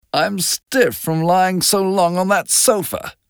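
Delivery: high, grousing, put-out complaining tone. Miss Baker yawns and stands up, then speaks, complaining. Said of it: "she complained".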